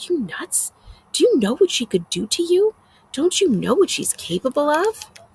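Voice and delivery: furious half-whisper. Reading a story aloud, a character scolding another on a bus: angry half-whisper. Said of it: "in an angry whisper says".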